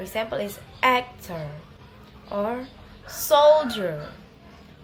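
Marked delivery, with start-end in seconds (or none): 3.1-4.1 first syllable of soldier louder and longer. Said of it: "say it a little louder and longer than the other one".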